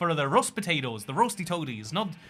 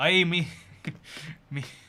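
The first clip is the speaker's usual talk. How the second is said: atrocious fake Scottish accent, clearly put-on. Trying to mix in more Scottish: atrocious Scottish accent. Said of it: "I gotta mix in some more Scottish".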